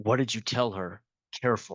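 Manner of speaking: whispering. Playing a character warning a companion about another character: whispering in character. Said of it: "I'll whisper to, um, uh, Sarah".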